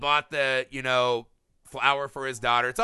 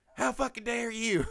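scandalized, indignant church lady voice, very high; 10 semitones higher, 4 dB quieter than usual. Retelling a movie scene, imitating an indignant church lady. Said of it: "like a church lady would say".

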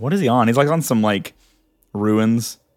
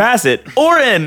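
put-on toy announcer voice, higher and louder; 12 semitones higher, 4 dB louder than usual. Imitating how a game character sounds: Bop It guy voice. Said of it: "he sounds like the Bop It guy".

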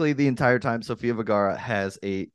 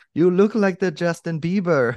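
bad put-on Colombian Spanish accent, pitched up; 7 semitones higher than usual. On a show that does not promise accents, tell the listener this in a terrible Sofia Vergara accent. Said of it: "That was a terrible Sofia Vergara accent".

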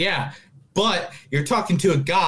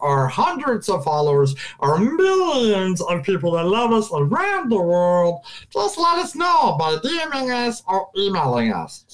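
goofy voice with wide swooping pitch swings; 4 semitones higher than usual. A host asks listeners to get in touch, in a Jar Jar Binks voice. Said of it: "we had Jar Jar Binks do a guest".

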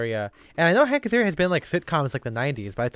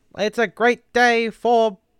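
loud, slow, drawn-out sportscaster delivery; 9 semitones higher, 6 dB louder than usual. Showing the other speaker the Howard Cosell voice. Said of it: "trying to do a Howard Cosell kind of a thing".

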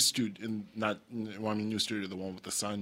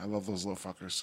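dejected and despondent, quieter; 2 semitones lower, 8 dB quieter than usual. Answering whether he still loves his younger siblings: despondent. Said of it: "You said that with such despondency".

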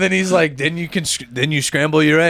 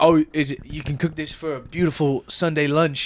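nonchalant put-on chef voice, quieter; 2 semitones lower, 5 dB quieter than usual. Mocking a cooking show by doing the celebrity chef: Gordon Ramsay impression. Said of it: "For my Gordon Ramsay shit".

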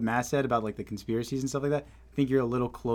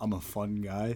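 mock deadpan, quieter and slower; 2 semitones lower, 5 dB quieter than usual. Speaker teasing the listener by mimicking how he said it, imitating deadpan delivery. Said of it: "You said that with like the straightest face".

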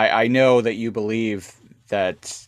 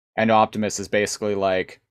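usual speaking voice

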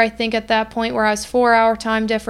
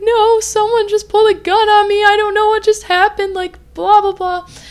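play-acted talking through sobs, high and tearful; 10 semitones higher, 4 dB louder than usual. Retelling answering two women after a gun was pulled, retelling crying while talking. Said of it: "I started crying".

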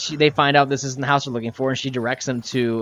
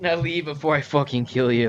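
ordinary talk, nothing marked

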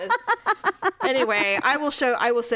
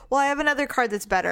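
ordinary talk, nothing marked

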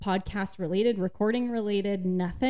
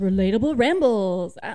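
game show host announcer voice, much louder; 7 dB louder than usual. Co-host announcing the show's name into the mic, game show host voice. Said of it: "like a game show host".

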